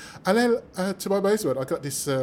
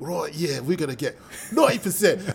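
put-on London accent, casual. Imitating Aston Villa fans giving playoff odds, in a London accent. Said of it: "Villa fans speaking with a London accent".

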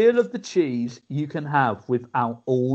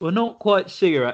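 ordinary delivery

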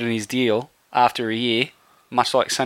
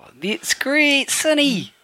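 very high, swooping, botched Kiwi bro accent; 13 semitones higher than usual. Trying to switch from an English to a Kiwi voice, use a Kiwi bro accent. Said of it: "I'll have to talk in a Kiwi bro accent".

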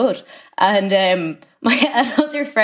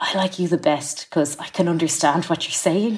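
put-on whisper; 3 semitones lower, 3 dB quieter than usual. Retelling what a crew member said to the speaker: imitating a whisper. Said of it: "they kind of whispered to me".

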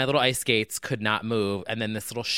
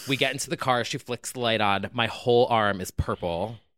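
normal talking voice

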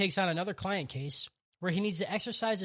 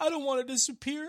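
put-on tearful pleading voice, higher; 7 semitones higher than usual. Recapping a scene where Dimple starts to cry: imitating Dimple crying. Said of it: "But then Dimple starts to cry".

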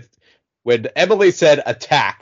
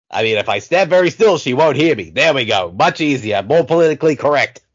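put-on New York accent, all the way. A player comments to himself with zombies around; New York accent. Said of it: "I don't know why I'm talking with a New York accent".

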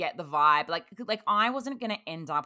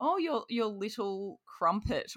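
put-on high, slow old English grandmother voice, words drawn out; 6 semitones higher, 3 dB quieter than usual. Retelling what mum called a younger boyfriend: imitating mum like an English eighty-year-old nana. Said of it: "this sounds like my mum is, like, an English, like, eighty-year-old nana".

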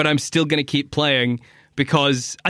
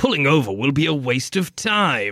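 grating, annoying put-on British accent. Complaining about how a game character sounds, imitating him in an annoying British accent. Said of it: "he's got an even more annoying British accent".

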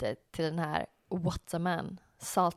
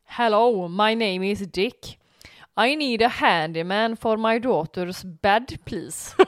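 put-on Gothenburg accent; 3 semitones higher, 8 dB louder than usual. Act out a man speaking to the hotel reception in a rowdy Gothenburg accent. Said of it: "säger på brötig göteborgska".

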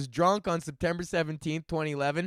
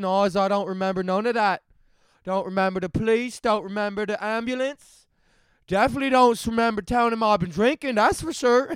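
poorly faked Newfoundland accent; 3 semitones higher than usual. Retelling what a man said when his case came before a judge: bad Newfie accent. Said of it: "that's a pretty bad Newfie accent".

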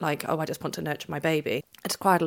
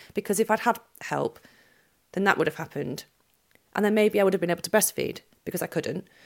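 feelings rising, becoming a bit upset. Telling another speaker about a hospital stay after birth, getting a bit upset. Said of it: "sorry, I'm getting a bit upset".

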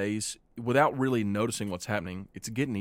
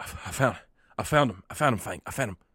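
panting character voice, much slower. Telling a story where Thorn rushes back to Fang: Thorn, panting. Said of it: "he's kind of panting".

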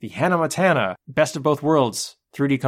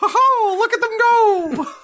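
put-on cartoon mouse voice, higher and louder; 4 dB louder than usual. Picturing animals thrown off cliffs in a Disney documentary: Walt Disney voice. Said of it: "That's just how Walt sounded".

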